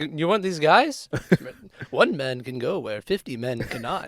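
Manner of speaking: put-on slimy voice. Acting out a character from a story being discussed, slimy guy impression. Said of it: "that was a good impression".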